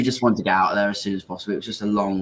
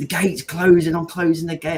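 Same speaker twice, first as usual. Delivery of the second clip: mock, high-pitched, loud shouted delivery; 8 semitones higher than usual. Retelling the gate guy's words over the phone call, imitating someone shouting. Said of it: "this guy was shouting".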